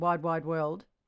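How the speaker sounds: spoken with an Australian accent. Showing how lips move, saying the phrase in an australian accent. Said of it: "if I say it in Australian".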